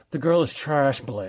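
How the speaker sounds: put-on lockjaw rich-kid voice with jaw locked tight. Quoting a movie line about a girl: James Spader voice. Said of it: "my best, uh, James Spader voice".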